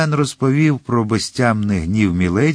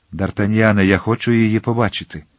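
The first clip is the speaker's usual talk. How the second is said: plain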